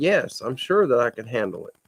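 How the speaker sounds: plain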